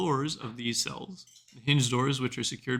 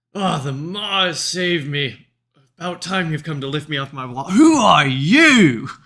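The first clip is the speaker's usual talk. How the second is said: big, hearty, very loud booming voice; 4 semitones higher, 13 dB louder than usual. As a player opens the door, a voice from the wall calls out, loud and hearty. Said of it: "in a loud, uh, kind of hearty voice".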